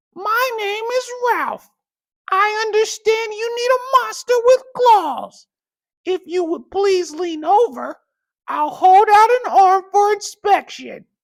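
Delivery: very high-pitched, silky voice. Narrator reads a monster introducing itself to the narrator, in Ralph's high, silky voice. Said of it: "said a high, silky voice".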